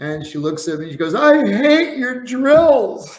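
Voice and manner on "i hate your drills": slow, very high, loud, tearful sobbing wail. Retelling what a swimmer in tears said: imitating someone crying. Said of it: "she's just in tears and crying".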